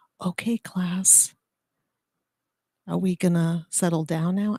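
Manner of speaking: put-on whisper. Retelling how they got a class's attention as a teacher: imitating own whisper. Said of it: "I would whisper".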